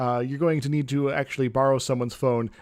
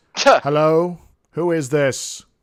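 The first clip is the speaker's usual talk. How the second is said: loud, harsh, slow voice with a faint echo; 2 semitones higher, 7 dB louder than usual. Narrating a phone call, the voice answering after three rings: harsh, echoing voice. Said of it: "a very harsh voice with a little bit of an echo".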